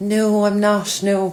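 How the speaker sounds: put-on posh accent, high, very slow, drawn out. Retelling a chat with a lady who thought the speaker was posh: putting on a posh accent. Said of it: "the posh accent kind of came out".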